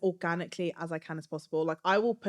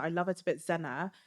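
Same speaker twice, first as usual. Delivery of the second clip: ordinary delivery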